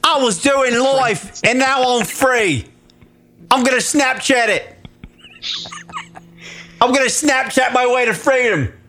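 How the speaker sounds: put-on British accent. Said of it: "Do it British".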